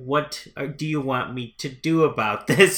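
dry, deadpan put-on voice. Retelling a film scene, imitating the president's line: dry delivery. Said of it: "he does a really dry".

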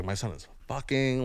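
play-acted shocked, horrified, freaked-out outburst. Retelling a mother finding condoms in a drawer: imitating mom freaking out. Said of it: "she freaked the fuck out".

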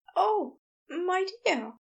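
anxious, uneasy tone. Narrator reads a man taking a friend's hand as he speaks; nervous. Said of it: "He sounded nervous".

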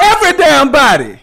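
furious, very loud, high angry shout. Asked who keeps telling him to go to bed, he answers angry. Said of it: "Why are you so mad about that?".

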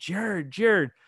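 high, calling shout. Recounting yelling a name near a signing booth, retelling a yell. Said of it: "I realize like I'm yelling".

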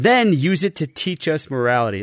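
ordinary talk

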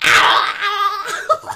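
high, loud demonic possessed scream. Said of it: "they're screaming".

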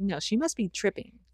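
ordinary talk

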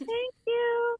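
high, loud, embarrassed tone.

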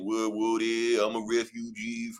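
weird, put-on Louisiana accent. Mimicking relocated New Orleans people, weird Louisiana accent. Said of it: "people had these weird Louisiana accent".

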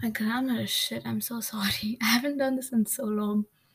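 nervous, anxious, breathy voice. Speaker apologizing for their grammar after a long break, nervous and anxious, breathy. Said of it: "I feel so nervous and anxious I don't know if that's obvious from the way I'm talking it's all breathy".

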